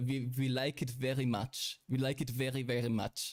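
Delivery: terrible fake German accent. Demonstrating the accent they put on, speaking in a bad German accent. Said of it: "The German accent is awful".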